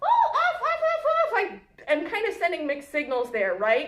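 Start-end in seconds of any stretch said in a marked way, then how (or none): 0.0-1.6 shrill, animated, loud, high, excited yelling. Retelling yelling at the dogs jumping up on them, retelling a loud excited yell. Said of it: "If I'm really loud, excited, and animated about it".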